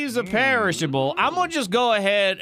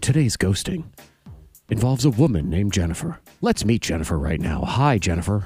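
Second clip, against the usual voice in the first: grave, serious TV documentary narrator voice; 12 semitones lower than usual. Host opens the Ghost Hunters segment in a serious documentary voice. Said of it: "I'll put my serious voice on".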